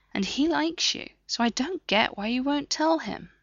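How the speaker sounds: careful, gentle, slightly high voice. She sits down beside him on the couch and answers him, gentle voice. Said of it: "She was careful to keep her voice gentle".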